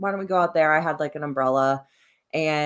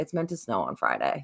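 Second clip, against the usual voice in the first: irritated, fed-up, annoyed tone; 5 semitones lower, 6 dB quieter than usual. Retelling telling a partner about snow before a shoot: retelling own annoyed remark. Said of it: "all annoyed".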